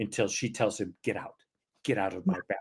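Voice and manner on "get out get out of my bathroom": put-on distressed, upset delivery, kept low. Retelling a story, quoting a woman arguing with a man: retelling an upset demand. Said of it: "she's upset".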